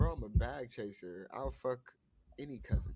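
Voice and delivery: plain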